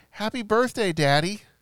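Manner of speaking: put-on small, high, loud little kid voice. Retelling answering the phone before fully awake; imitating a small child's voice. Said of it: "a little 6 or 7 year old child's voice".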